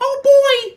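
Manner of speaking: put-on cartoon mouse voice. Trying a first-ever impression after reading a comment: Mickey Mouse voice. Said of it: "Mickey Mouse".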